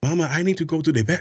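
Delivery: put-on Spanish accent, spoken high. As a kid, mimicking the Spanish kid to his face: mimicking a Spanish accent. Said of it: "I start to mimic them".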